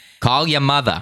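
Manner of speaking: put-on Brooklyn accent, pitched high. Reading out someone's message, doing a Brooklyn mother-in-law voice. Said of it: "in my best Brooklyn mother in law's voice".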